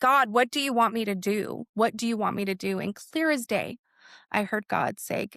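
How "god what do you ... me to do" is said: acted-out loud crying out. Recalling walking down the street ready to give up, retelling crying out loudly. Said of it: "I cried out lou loudly".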